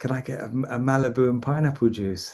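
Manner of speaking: private, hushed half-whisper, close in the ear. Retelling a customer's order at a bar: imitating someone half-whispering. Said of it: "whispers into my ear and says".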